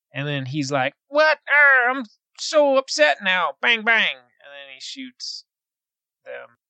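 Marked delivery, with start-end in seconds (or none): 1.1-4.2 put-on bad country accent, higher pitch. Retelling a movie scene, imitating Gabriel Byrne's terrible country accent. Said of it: "His country accent".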